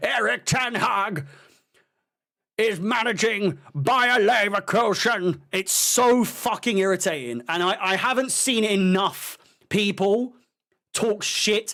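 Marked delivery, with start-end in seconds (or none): 0.0-5.4 put-on voice through bottom teeth, much higher. Mocking the way a man the speaker hates talks: imitating talking through bottom teeth. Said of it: "he talks through his bottom teeth".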